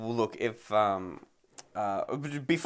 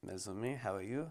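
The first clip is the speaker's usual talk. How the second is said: very hushed, very quiet put-on French accent; 2 semitones lower, 14 dB quieter than usual. Asked to give it a go, trying out a French accent. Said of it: "Do you want to give it a go?".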